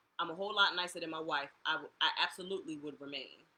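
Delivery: ordinary delivery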